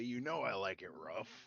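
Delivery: playful, slow, teasing, tongue-in-cheek joking tone. A player answers the character who won't transform, joking.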